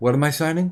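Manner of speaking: soft half-whisper under the breath. Describing clips of Biden about to sign something: imitating Biden half-whispering. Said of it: "and he whispers".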